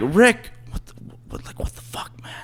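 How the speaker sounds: quiet breathy whisper under the breath. Retelling what he whispered to Rick while she watched them, retelling a whisper. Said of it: "Why are you whispering?".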